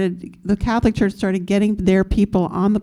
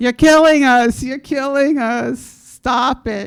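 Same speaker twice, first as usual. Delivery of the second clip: high, raised, hollered yell; 5 semitones higher, 4 dB louder than usual. Recounting how an ACT UP member on a pew confronted O'Connor, imitating someone yelling. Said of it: "he starts yelling at O'Connor".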